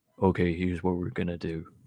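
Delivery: put-on very deep voice. Imitating a video games streamer who uses a deep voice mod: imitating PirateSoftware's deep voice. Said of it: "uses, like, a voice mod to make his voice really deep, and then he's like".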